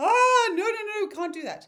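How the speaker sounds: very loud, high-pitched, shrill protesting shout. Acting out the inner responsible part refusing to let go: imitating an inner voice shouting. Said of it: "your responsible one shouting out".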